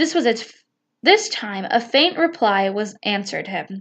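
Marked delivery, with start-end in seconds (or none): none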